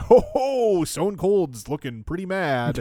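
drawn-out ringside announcer call. Retelling the announcer's call as a wrestler throws things around: big announcer voice of Vince McMahon. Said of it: "Vince is doing his big announcer".

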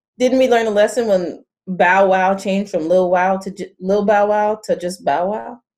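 ordinary talk, nothing marked

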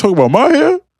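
mock snapping griping, very high, loud, squealed.

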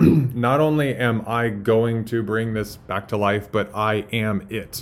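ordinary talk

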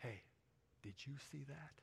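hushed, awed, reverent whisper. Retelling what the younger brother said in the bunk: imitating a quiet, reverent voice. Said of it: "in this really quiet, reverent voice".

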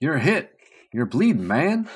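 high, swooping, big and dramatic delivery. Doing a dramatic reading of movie dialogue: dramatic reading as Panchito. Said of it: "why don't you be Panchito?".

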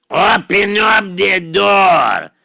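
mean voice with the word door drawn out. In a pretend game at the door, the caller outside speaks in a mean Big Bad Wolf voice. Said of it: "It sounds like a mean voice".

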